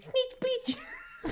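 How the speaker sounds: mock unmanly, very high-pitched, loud shrill outburst. Mocking another speaker's loud way of saying a phrase: imitating someone saying it loudly. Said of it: "because you went".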